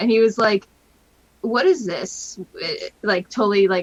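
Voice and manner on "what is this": mock grossed-out kid voice, disgusted and repulsed. Retelling a young nephew's reaction to a figure: imitating a disgusted kid. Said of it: "he sounded, like, disgusted".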